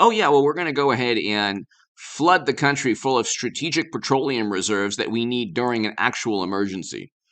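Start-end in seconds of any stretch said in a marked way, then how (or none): none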